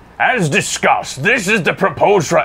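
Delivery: failed attempt at Swedish accent. Reading aloud a development note from Torbjorn, in a Torbjorn voice attempt. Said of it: "I can't do the Swedish".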